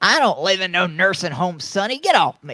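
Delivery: put-on old person voice. Told he'll be taken back to a nursing home, the speaker objects in a pretend old person voice. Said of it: "You sound like an old person".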